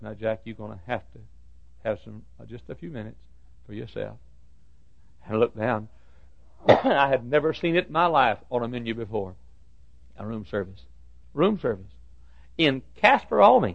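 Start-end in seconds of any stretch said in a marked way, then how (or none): 0.0-4.2 quiet, soft murmur to oneself. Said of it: "I said to myself".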